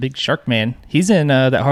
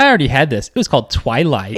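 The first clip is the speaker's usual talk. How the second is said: ordinary delivery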